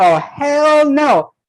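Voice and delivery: sudden, high, startled acted scream. Retelling what someone on the call screamed: imitating someone screaming. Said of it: "J J screamed".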